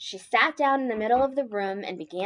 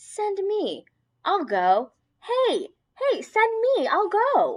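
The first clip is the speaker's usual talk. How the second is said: tiny, high, squeaky, sing-song little voice; 10 semitones higher, 3 dB louder than usual. Narrator reads a voice calling down from up above: tiny voice. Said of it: "A tiny voice from up above said".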